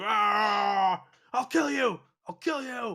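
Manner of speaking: slow, loud, furious scream with long drawn "ah". Voicing an offended one-legged character who screams at a player: screaming in character. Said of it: "He screams at you".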